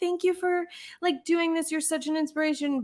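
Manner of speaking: put-on tearful, starstruck gushing. Recalling thanking someone as a young fan, imitating own past crying. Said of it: "like crying".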